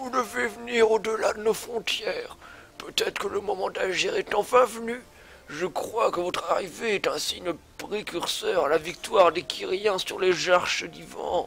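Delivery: put-on high, soft elderly man's voice. Voicing an old character's lines, the speaker puts on an old man voice. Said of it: "On va faire une voix de vieux".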